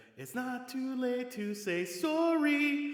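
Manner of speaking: overly exaggerated Canadian accent. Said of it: "overly exaggerated Canadian accent".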